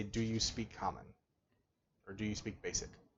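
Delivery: very low volume. Turning his head to address him, the character asks at very low volume. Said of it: "in a very low volume".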